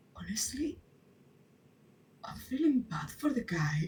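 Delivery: hushed half whisper, kept quiet. Voicing a character speaking so the man won't hear: half whisper. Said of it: "so she half whispers".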